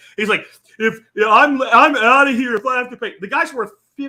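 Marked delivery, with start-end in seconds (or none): 0.8-3.2 put-on loud, whiny crybaby hissy-fit voice. Retelling how Stephen King reacted to paying twenty bucks: imitating Stephen King whining. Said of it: "he's whining his ass about twenty bucks".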